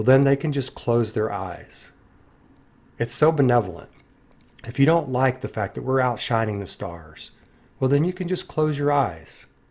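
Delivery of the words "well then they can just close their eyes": usual speaking voice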